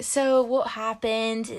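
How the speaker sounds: put-on full-on British accent. Retelling what a British doctor asked: imitating a British accent. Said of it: "he was, like, talking like that".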